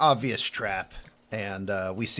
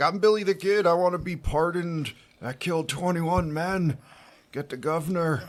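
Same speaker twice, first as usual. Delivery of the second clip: put-on crotchety old man voice, pitched higher; 4 semitones higher than usual. Retelling a movie scene, as the guy who gets out of the car: Grandpa Simpson impression. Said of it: "doing his best impression of Grandpa Simpson".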